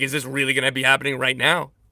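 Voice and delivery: plain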